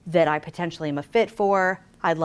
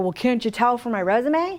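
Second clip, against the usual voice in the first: irritated, angry, indignant pushing-back tone; 5 semitones higher than usual. Retelling what candidates say when they get mad, imitating an angry candidate. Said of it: "candidates get mad and go".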